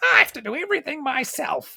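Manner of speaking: very high, shrill pirate goblin shout. Game master voicing the pirate goblin: yelling pirate goblin. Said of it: "the pirate goblin just yells".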